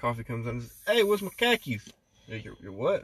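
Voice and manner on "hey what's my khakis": put-on very high, loud, shrill Boston accent, R dropped. Joking about a boston guy who lost his car keys, in a boston accent. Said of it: "That's how a Boston motherfucker says it".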